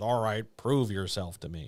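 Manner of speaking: ordinary talk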